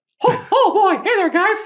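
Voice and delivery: very high, loud, little cartoon mouse voice. Talking about impressions, the speaker shows off a Mickey Mouse impression. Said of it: "I do a good Mickey Mouse".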